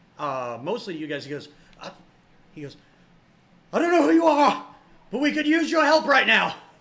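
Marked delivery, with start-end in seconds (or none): 3.7-6.5 shrill, booming, very loud, high shout. Voicing a character in a fight who shouts to the party: shouting to the party. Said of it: "he just kinda shouts out".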